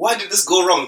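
ordinary talk

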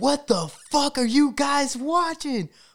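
put-on, sudden, loud, shrill, high-pitched yell. Recounting a man waking in a packed theater, the speaker quotes him: retelling a yell. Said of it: "he wakes up and he starts yelling".

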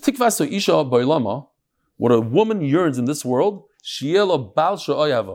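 ordinary delivery

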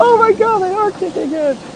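put-on very high, giggling, gushing schoolgirl voice. Retelling hiding in a dorm corner with friends, acting out schoolgirl giggling. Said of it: "just start giggling like a bunch of schoolgirls".

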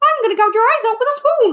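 very high, loud, little cartoon-style squeak. Recalling a favorite bit of making the character say weird things, in a Mickey Mouse impression. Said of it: "I used to do Mickey Mouse, like, impressions".

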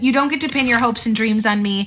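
ordinary talk

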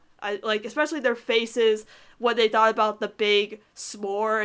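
ordinary talk

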